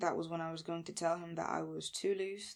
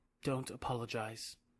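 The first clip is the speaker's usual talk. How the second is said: whispery voice, much lower; 6 semitones lower than usual. Reading a story, the narrator voices his reply to an apology; whispery voice. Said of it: "he said in that whispery voice".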